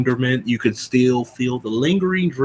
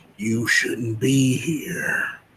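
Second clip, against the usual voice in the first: soft, throaty, guttural near-whisper; 5 dB quieter than usual. Narrating a voice heard from glowing red eyes in the bushes, guttural whisper. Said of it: "like almost like a whisper, but has like a guttural noise to it".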